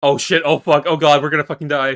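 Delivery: mock panicked voice. Imagining how the group would react to the monsters: imitating panicked cursing. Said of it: "We'd be cursing out".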